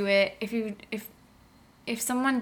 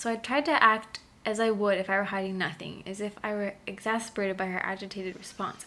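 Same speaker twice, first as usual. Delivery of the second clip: ordinary talk, nothing marked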